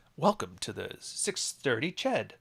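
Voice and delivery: put-on radio announcer voice, on-air broadcaster delivery. Trying out an almost-finished radio voice: radio announcer voice. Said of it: "I think I've almost got my radio voice".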